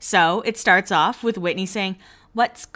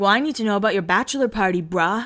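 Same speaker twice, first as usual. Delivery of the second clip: put-on surfer-dude voice. Retelling a conversation between Brody and Spencer, quoting Brody; Brody surfer-dude impression. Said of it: "He's such a surfer".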